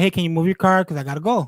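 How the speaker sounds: ordinary delivery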